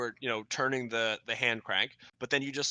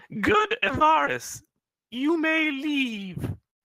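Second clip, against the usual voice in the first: very high, very loud, slow, drawn-out shout; 8 dB louder than usual. Shouting out in another character's voice to trick them: imitating Rimple's voice. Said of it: "in Rimple's voice".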